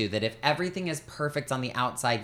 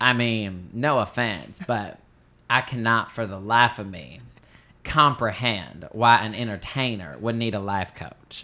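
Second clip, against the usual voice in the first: slow, drawling put-on Southern American accent; 3 semitones lower than usual. Quoting a man's remark about life coaches, in a Southern American accent. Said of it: "I'll try to do the Southern accent".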